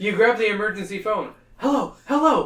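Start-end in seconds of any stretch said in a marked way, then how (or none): 1.6-2.5 high, loud calling out. Narrating a second-person story, the hero shouts into the emergency phone. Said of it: "You shout into the receiver".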